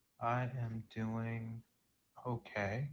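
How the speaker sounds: sad, downcast, down-sounding tone. A caller answers the host's greeting on a call-in show: sad. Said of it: "You sound sad".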